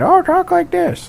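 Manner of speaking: put-on horrible, very high, creaky old-timer voice. Speaker mimics how old people talk, in a horrible old people voice. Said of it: "that's my horrible old people voice".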